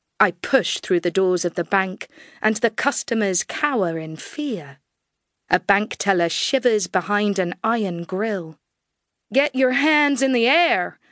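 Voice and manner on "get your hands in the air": yelled, put-on Texan drawl. Bursting into a bank, the narrator yells at the customers: yelling in a Texan drawl. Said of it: "I yell at the crowd, in my best Texan drawl".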